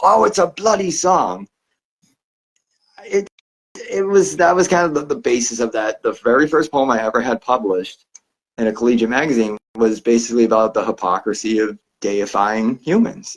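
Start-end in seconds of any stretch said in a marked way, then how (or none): 0.0-1.5 acted, petulant, temperamental, high-pitched yell. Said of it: "that very petulant ... had yelled from across the room".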